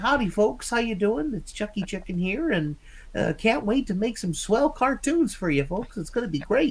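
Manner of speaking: very high-pitched put-on character voice. Describing a character modeled on a young Walt Disney: young Walt Disney voice. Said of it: "he's a bad Walt Disney impersonation ... he kinda talks like this a little bit".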